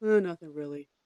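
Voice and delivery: put-on flat monotone. Retelling how someone answered after the speaker came home from work, imitating a monotone. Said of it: "they're very like monotone".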